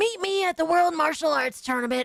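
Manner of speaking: high-pitched trolling tone. Retelling trolling people in party chats: Kid Trunks voice. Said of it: "being trolled by Kid Trunks".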